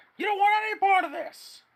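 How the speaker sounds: loud shouting. Voicing a guard who trains a blaster on a player, yelling. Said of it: "is gonna start yelling at you".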